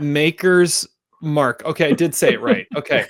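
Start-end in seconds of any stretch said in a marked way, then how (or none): 0.0-1.6 very slow, careful enunciation. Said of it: "let me try one more time".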